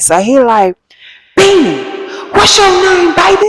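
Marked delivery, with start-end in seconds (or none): 1.4-3.5 very high-pitched, slow, drawn-out yelling. Retelling a loud man asking her name: imitating a man yelling. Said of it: "yelling questions at me".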